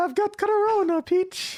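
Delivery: very high-pitched, sick-sounding voice. Riffing on video game character voices, doing a Mario voice with the flu. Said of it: "Mario's got the flu".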